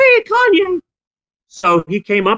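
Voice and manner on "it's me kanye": put-on cartoon mouse voice, higher and louder. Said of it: "he sounds like Mickey Mouse".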